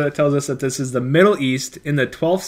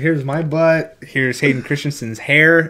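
normal talking voice

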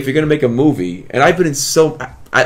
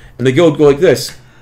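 ordinary delivery

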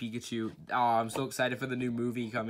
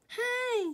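very high little creature voice, "hey" pitched way up. Showing a Kirby figure and doing what he says: Kirby voice. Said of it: "That's what he says".

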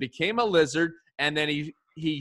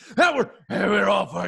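rough, creaky, rasping ranting put-on voice, badly done; 4 semitones higher, 4 dB louder than usual. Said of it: "that was a bad impression".

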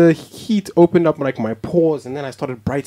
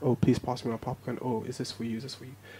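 put-on whisper, much quieter; 5 semitones lower, 15 dB quieter than usual. Retelling passing popcorn in a cinema, imitating their whispering.

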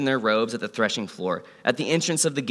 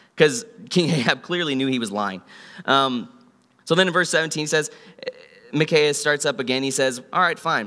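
ordinary delivery

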